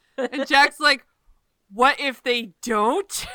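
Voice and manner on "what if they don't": put-on indignant tone, louder. Retelling a scene, acting out Jack's reply to Sam, retelling Jack's indignant reply. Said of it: "He's so indignant".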